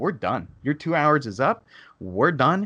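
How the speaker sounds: pissed-off, fed-up tone. Retelling what the speaker told a timeshare saleswoman: retelling a raised voice. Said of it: "I pretty much raised my voice at her".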